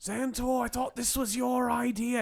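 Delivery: loud, high-pitched stage whisper. Narrator voicing a character who tries to whisper to a player, a loud failed whisper. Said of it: "He tries to whisper to you, but he's very loud about it".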